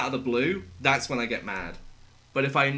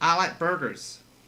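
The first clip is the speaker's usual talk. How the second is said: fake, put-on American accent; 3 semitones higher than usual. Asked to say something in an American accent, put-on American accent. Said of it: "Give me something to say in an American accent".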